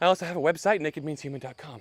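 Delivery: short of breath. Speaker addressing viewers and patrons, out of breath. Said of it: "I am actually out of breath".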